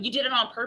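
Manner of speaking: ordinary talk, nothing marked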